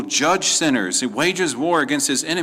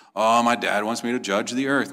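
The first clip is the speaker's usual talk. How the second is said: pretend reluctance, lower; 3 semitones lower than usual. Mocking a wrong view of the Son judging the earth: mock reluctant voice. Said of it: "this is not the Son reluctantly".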